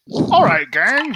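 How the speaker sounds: belted out in a high puppet voice. Recalling how Garrick shouted to his gang, in a Muppet-like Garrick voice. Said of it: "It was like a Muppet".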